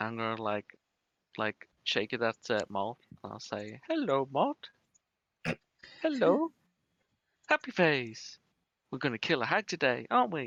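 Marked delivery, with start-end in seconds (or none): 3.9-10.5 squeaky, high, sing-song little doll voice. Player shaking a doll at Malt and voicing the doll: high-pitched doll voice. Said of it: "mimic like a ki- like a high pitched voice".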